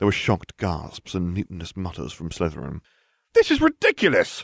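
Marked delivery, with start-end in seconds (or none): 3.3-4.4 very high-pitched, outraged, indignant outcry. Protesting the award of points to two students, a student: cried out. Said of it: "I cried".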